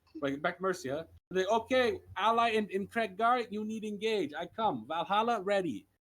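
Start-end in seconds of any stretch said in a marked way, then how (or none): 1.7-5.9 put-on higher, louder Russian-accented voice. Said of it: "you're making Wade sound like he's Russian".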